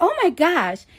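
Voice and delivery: put-on Staten Island-accented speech.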